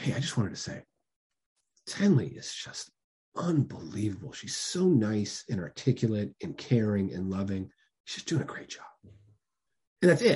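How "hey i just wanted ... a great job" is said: slow, hushed, confiding whisper, like sharing a secret. Acting out someone at a birthday party sharing praise: imitating a secretive whisper. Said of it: "whisper it like it's a secret".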